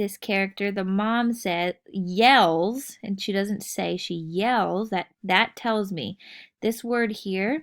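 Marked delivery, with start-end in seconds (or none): none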